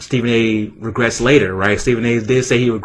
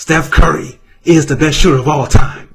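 emphatic, pitched up, with heavy emphasis; 5 semitones higher, 4 dB louder than usual. Imitating a commentator stating something everyone agrees on: demonstrative Stephen A impression. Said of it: "he starts to say it in a demonstrative way".

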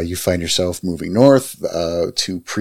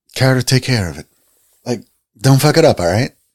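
curt, brusque, irritated, slangy, raised and pitched up; 6 semitones higher, 5 dB louder than usual. Game master voicing the woman, telling Carter to take care of it: young woman character voice. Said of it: "The woman sighs, / you recognize this young woman from your little hunting trip this morning".

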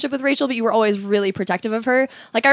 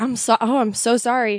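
mock distraught, crumbling voice. Retelling how Rachel crumbled on the phone: imitating a crumbling apology. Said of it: "Rachel just crumbles".

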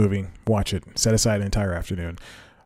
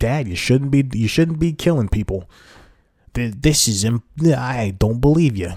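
put-on Italian accent, higher and slower; 4 semitones higher, 3 dB louder than usual. Imagining what the daughter in a movie could have said to her dad, Italian voice. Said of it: "so that's my Italian voice".

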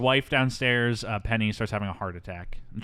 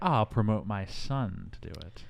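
plain

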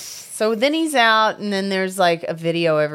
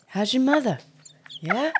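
put-on rising, upward-lilting voice, higher and quieter; 4 semitones higher, 5 dB quieter than usual. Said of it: "smash cuts to Mark Wahlberg in his classroom".

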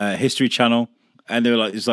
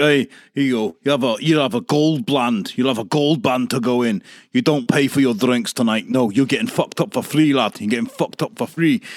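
put-on broad, thick Scottish accent. Retelling what a scottish guy at a festival said to him, broad scottish accent. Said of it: "he's a broad Scottish guy".

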